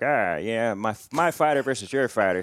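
put-on old-time gangster-style wiseguy mobster voice. Describing old smoker fights, acting out gym men smoking cigars: mobster voice. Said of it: "I don't know why I gave them mobster voices".

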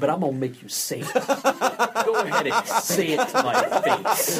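mock-innocent, sarcastic.

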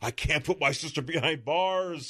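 really whiny, high-pitched, protesting tone. Retelling what the brother in a comic says: imitating a whiny voice. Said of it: "just being a really whiny".

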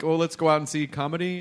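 normal talking voice

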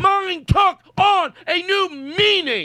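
high, slow, sarcastic mock repeat.

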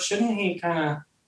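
mock eerie, unsettling, creepy tone. Quoting a woman who came up to the speaker, imitating her creepy delivery. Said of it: "even the way she said it was so creepy".

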